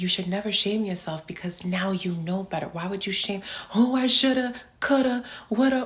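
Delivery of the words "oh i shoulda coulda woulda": acted-out, high, loud, sobbing, regret-filled crying. Imitating someone shaming themselves over the past: mock crying. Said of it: "you crying".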